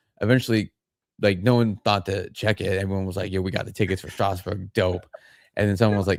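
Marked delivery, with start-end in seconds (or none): none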